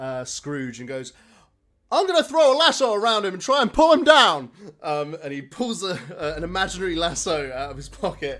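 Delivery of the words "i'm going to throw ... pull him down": shrill, very loud, very high character voice. Voicing a character who throws a lasso at Scrooge: George Bailey impression. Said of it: "I'm never ready for the George Bailey impression".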